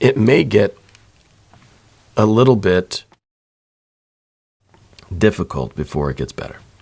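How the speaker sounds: emotional, choked-up voice, catching and breaking. Talking someone through their power card, getting choked up mid-sentence. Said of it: "I'm getting kind of choked up here".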